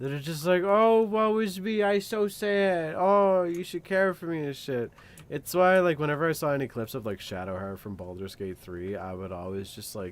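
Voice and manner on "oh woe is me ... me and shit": high, loud, drawn-out whine. Complaining about characters who whine all the time, the speaker does a mock whiny voice. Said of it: "whiny all the time".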